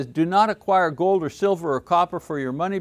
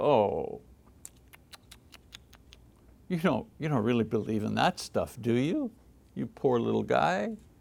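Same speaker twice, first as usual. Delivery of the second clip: mock belittling, talking-down tone, low and soft; 6 semitones lower, 6 dB quieter than usual. Retelling how a woman talked down to him, mock-condescending. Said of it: "it's the way she said it".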